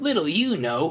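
saucy, cheeky, high voice. Reading a railway story, one engine answers another, cheeky. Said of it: "replied Percy cheekily".

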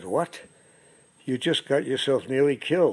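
ordinary delivery

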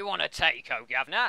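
put-on Cockney accent. Asked by another speaker to try the phrase, in a Cockney accent. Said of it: "Someone want to do a Cockney accent?".

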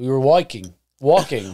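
British accent. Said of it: "I don't know why I turned British".

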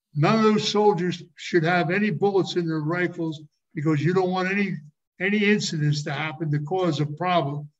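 normal talking voice

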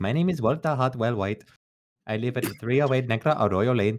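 dubbed, synthesized-sounding synthetic voice. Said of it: "Hatsune Miku is, is [name], and she's like".

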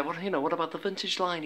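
shrunken, small, soft little voice. Retelling what a friend said: Matty's little voice. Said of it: "in his little voice".

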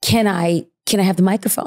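put-on whispered voice. Retelling how an inmate asked for the microphone: imitating a whisper. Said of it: "she whispers".

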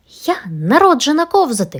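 gleeful, high, loud cry of delight. Everest answers when asked who wants to go sliding, joyful exclamation. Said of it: "радісно вигукнула Еверест".

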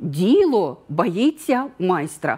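emphasis landing on діло. Answering a question, singling out the key word by voice: stress on "діло". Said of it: "І у відповіді я виділяю голосом слово «діло»".

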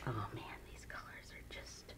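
very quiet whispering.

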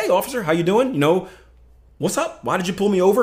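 casual, relaxed tone. Acting out a driver speaking to the officer: imitating a casual tone. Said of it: "speak to the officer very casually".

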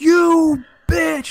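very high-pitched shriek at the top of the lungs. Retelling how they yelled out in a gaming hall, re-enacting a top-of-lungs yell. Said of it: "just some dude just yells".

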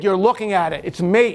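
ordinary talk

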